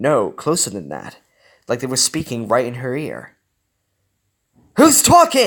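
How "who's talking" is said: sharp snap, very high and very loud. Riley hears unseen voices in her ear and demands who's talking, snapped. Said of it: "Riley snapped".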